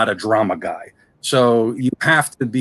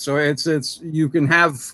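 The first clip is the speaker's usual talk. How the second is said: ordinary talk, nothing marked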